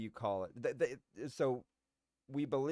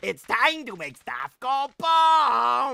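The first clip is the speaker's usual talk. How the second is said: very loud, very high, chest-straining character voice; 12 semitones higher, 15 dB louder than usual. Contrasting a calm meditating state, in a chest-straining character voice. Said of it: "pull a muscle in my chest occasionally just from doing that voice".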